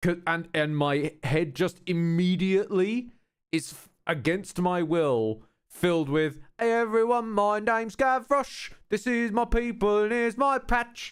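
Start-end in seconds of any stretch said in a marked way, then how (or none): 6.6-11.1 put-on London street-kid accent. Complaining that a character's accent is stuck in the head: Gavroche accent. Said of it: "They've ruined that accent for me".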